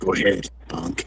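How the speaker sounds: rough, raspy, half-whispered hard-man tough-guy voice. Trading tough-guy lines with others, in a raspy tough-guy voice. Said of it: "That raspy, tough guy".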